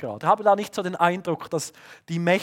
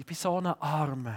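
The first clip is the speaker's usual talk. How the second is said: put-on, wallowing, self-pitying poor-me lament; 2 semitones lower, 8 dB quieter than usual. Voicing the inner voice of self-pity, with mock self-pity. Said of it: "Selbstmitleid so".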